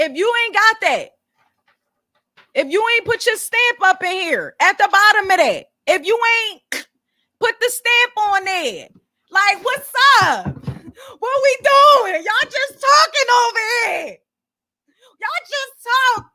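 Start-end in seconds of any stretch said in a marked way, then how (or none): 10.5-16.4 loud yell. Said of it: "Sorry, I'm yelling".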